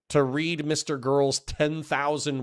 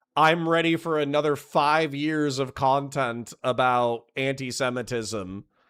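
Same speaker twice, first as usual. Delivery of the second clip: usual speaking voice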